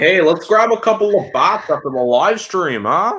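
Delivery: put-on Canadian accent. Teasing another speaker for sounding canadian, imitating a canadian accent. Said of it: "He's like".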